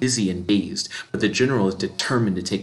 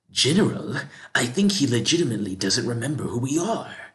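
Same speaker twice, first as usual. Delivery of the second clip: surprised, caught-off-guard tone; 3 semitones higher than usual. Reading a character's line addressed to the General: surprised tone. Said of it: "says Zaren in a surprised tone of voice".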